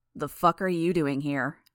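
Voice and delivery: ordinary delivery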